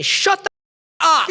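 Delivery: loud, high burst.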